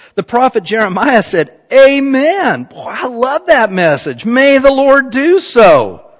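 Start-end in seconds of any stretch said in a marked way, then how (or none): 1.7-5.9 acted, slow, swooping, sarcastic approving tone. Reading the prophet's reply from verse 6, retelling a sarcastic reply. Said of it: "He gets real sarcastic".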